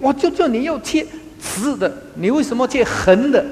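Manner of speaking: high, sharp scolding tone.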